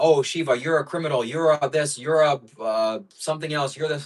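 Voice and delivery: snide, sarcastic, accusing voice. Imitating someone who lies about the speaker: imitating a sarcastic accuser. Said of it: "He's lying in a sarcastic way".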